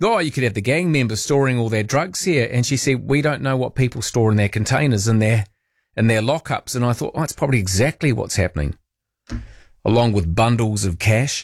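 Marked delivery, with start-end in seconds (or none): none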